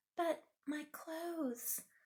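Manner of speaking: high, soft, hushed half-whisper. Reading a fairy tale aloud, the narrator voices Cinderella's reply, half-whispering. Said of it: "whispered Cinderella".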